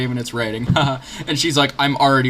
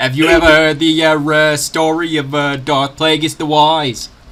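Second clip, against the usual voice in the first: put-on hesitant voice, pausing between words; 3 semitones higher, 6 dB louder than usual. Speaker redoes a movie quote, now sliding into a JFK impression. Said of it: "I'm just becoming J F K at this point".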